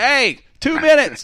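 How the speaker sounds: put-on very high, loud yell. Retelling calling the crew up from the basement: imitating own yell down the basement. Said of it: "I'm yelling down in the basement".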